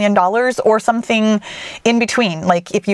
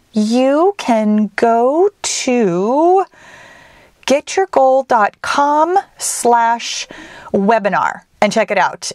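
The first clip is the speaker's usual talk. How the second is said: much slower pace of speech. A host telling listeners where to find a webinar replay, talking slowly. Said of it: "the reason I'm talking so slowly".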